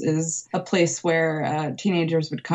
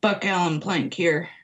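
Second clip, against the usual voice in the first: put-on gruff voice. Retelling a call from a mysterious number, imitating Buck Plank's gruff voice. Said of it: "this kind of gruff voice answered".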